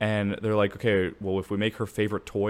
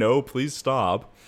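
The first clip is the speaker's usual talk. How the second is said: play-acted, screamed, begging voice; 3 semitones higher, 4 dB louder than usual. Retelling a video game scene, imitating the elephant toy screaming.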